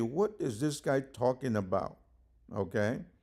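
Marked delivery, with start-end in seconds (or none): none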